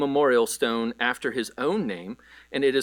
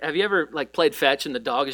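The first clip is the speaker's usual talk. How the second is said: usual speaking voice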